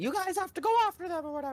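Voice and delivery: bad, very high cartoon mouse voice. Retelling a Kingdom Hearts scene, doing a bad Mickey Mouse impression. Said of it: "not the best Mickey impression".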